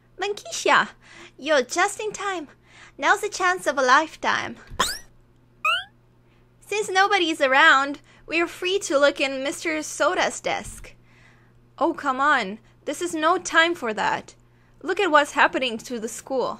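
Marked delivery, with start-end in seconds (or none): 0.2-11.0 really high-pitched character voice. Voicing a character who answers Bunkitia, high-pitched Ayaka voice. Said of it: "I think a really high-pitched one".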